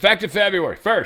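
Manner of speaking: high shouting. Reading aloud a post written entirely in caps, as a yell. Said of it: "Oh, I'm yelling".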